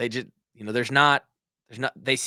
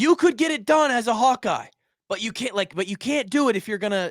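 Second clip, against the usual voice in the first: mock, raised-pitch yelling; 9 semitones higher than usual. Recounting how a man called out a player before the group, retelling a man's yelling. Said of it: "and he's yelling at him".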